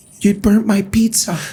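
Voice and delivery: mild, soft-spoken tone. Showing how a mistake could be pointed out to staff: soft gentle delivery.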